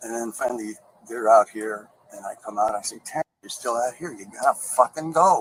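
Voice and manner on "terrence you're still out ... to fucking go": growing anger, angry tone, higher pitch. Retelling telling a man again to leave: imitating growing anger. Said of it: "I'm getting angrier and angrier".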